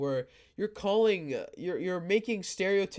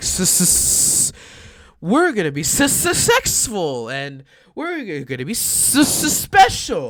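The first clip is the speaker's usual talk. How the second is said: put-on lisp, louder; 11 dB louder than usual. Imitating a game's voice acting into the mic: imitating voice actor's lisp. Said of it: "I'm trying to act like I'm being, have a lisp".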